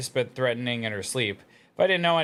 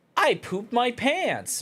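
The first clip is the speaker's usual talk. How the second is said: put-on very high, slow, annoying girl's voice; 11 semitones higher than usual. Answering chat about a caption, imitating the TikTok girl voice. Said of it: "you know the TikTok girl voice".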